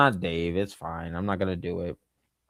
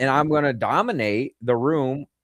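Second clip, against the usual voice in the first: ordinary talk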